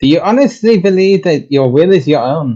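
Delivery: bad German accent. Voicing a character addressing a slug, in a bad german accent. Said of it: "I cannot do a German accent".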